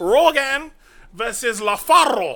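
fake Chinese accent with rolled r. Joking with co-hosts about an imagined fight, mock Chinese accent with rolled R. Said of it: "you roll the R if that was supposed to be a Chinese accent".

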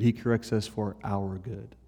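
the word our stressed hard, rising at the end. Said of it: "He doesn't correct us for his good".

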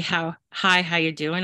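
ordinary talk

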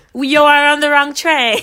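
attempted European accent. Retelling what a train conductor said, attempting a European accent. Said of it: "This is so bad".

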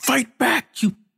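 shrill, very high-pitched yell. Retelling a game's final fight, imitating the opponent yelling at Kratos. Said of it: "Like just yelling at the like Kratos".

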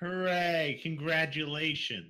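openly sarcastic delivery. Reacting to someone announcing they are quitting their job: sarcastic. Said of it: "You sounded more sarcastic".

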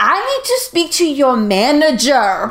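raging, demanding, furious rant. Likening her axe-swinging rage to an angry customer: mock-raging demanding customer. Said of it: "the storm of someone being like".

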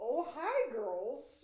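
hammed-up, loud, showy showman voice. Showing a co-host how the actor sounded in Little Women, in a showy Bob Odenkirk voice. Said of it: "his voice was very Mr. Showy".

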